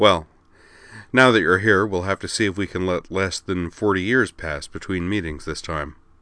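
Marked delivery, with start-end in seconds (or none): none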